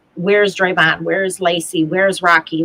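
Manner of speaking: ordinary talk, nothing marked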